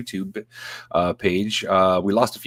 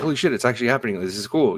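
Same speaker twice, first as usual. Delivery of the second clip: put-on excited tone. Retelling own reaction to news that seemed real: imitating own excited reaction. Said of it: "I got super excited for".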